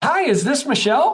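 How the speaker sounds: bright, high, energetic, upbeat voice. Showing how to open a call with high energy: upbeat, high-energy greeting. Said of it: "you want to start with high energy".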